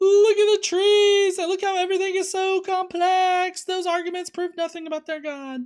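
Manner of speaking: shrill, very high-pitched put-on voice. Reading a viewer's comment quoting believers' arguments: high-pitched voice.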